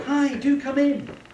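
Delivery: warm, approachable, very slow voice. Welcoming someone in and offering tea, in a warm approachable voice. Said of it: "when you're being approachable".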